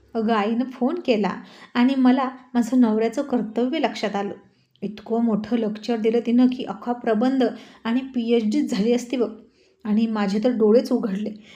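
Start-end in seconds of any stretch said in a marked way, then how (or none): none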